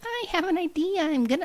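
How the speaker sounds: tiny elf voice, very high-pitched. Describing an imagined little elf with a bag of seeds, put-on elf voice. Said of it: "this is how he talks".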